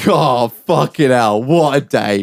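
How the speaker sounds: put-on speech with laughter running through it. Retelling a friend's reaction during a police stop: imitating someone laughing while talking. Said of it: "Rendell's laughing".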